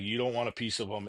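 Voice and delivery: ordinary talk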